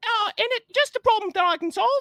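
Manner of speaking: very high-pitched, loud, put-on Cockney accent. Voicing a character's line: Cockney accent. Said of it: "a voice along, uh, along those lines goes".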